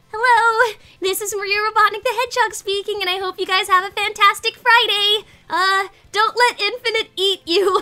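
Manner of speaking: high put-on character voice. Signing off for Friday in character: high-pitched Maria Robotnik the Hedgehog voice. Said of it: "it's definitely a more high-pitched voice".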